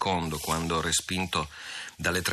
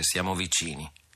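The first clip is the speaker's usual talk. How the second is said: plain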